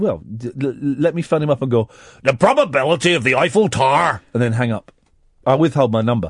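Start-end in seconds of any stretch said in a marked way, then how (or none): 2.2-4.2 put-on Northern Irish accent, louder. Speaker imagines phoning his brother-in-law, in a Northern Irish accent. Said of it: "in Northern Ireland say things like".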